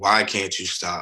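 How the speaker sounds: put-on tearful voice. Retelling a sister's crying plea to stop: retelling a tearful plea. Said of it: "my sister just crying and asking me".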